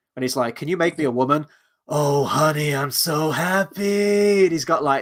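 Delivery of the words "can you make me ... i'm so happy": mock rough, raspy voice. Quoting a character from a film in a raspy voice. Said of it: "that raspy voice still".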